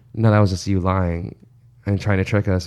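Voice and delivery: ordinary talk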